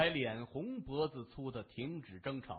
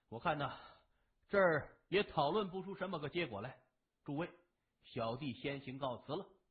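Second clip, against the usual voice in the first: ordinary delivery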